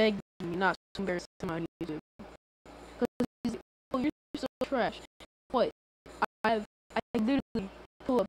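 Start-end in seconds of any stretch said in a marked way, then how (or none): none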